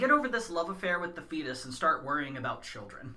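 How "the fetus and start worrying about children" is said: ordinary talk, nothing marked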